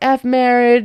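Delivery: small, mild, held-back scream. Retelling a couple's argument, the speaker voices her: retelling a scream. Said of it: "She's screaming".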